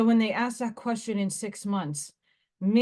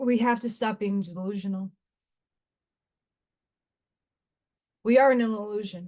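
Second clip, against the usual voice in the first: tearful voice, crying while speaking. A speaker who says she is being channeled, speaking tearful. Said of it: "it's coming in with tears because it hurts".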